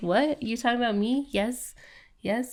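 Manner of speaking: soft, eager put-on dog voice. Telling a friend about their old dog reacting to sympathy; voicing the dog. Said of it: "and she'd be like".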